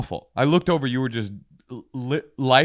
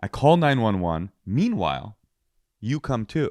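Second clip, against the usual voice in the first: usual speaking voice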